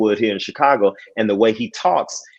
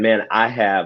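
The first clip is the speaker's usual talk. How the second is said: usual speaking voice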